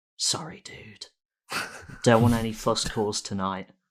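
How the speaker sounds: soft, hushed whisper under the breath. Speaking in character to a captured creature inside a ball: whispering in character. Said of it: "whisper to the ball".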